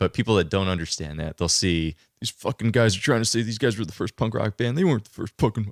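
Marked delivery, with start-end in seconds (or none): 2.2-5.7 mocking annoyed voice, higher. Imitating people who misread the film poster: imitating angry punk fans. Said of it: "That was a spot-on impression".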